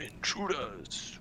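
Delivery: slow, drawn-out mock yell.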